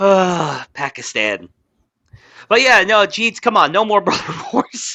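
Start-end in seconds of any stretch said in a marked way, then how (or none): 3.1-5.0 words breaking into pitched-up laughter. Urging others to stop fighting, laughing while talking. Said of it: "I couldn't say it without laughing".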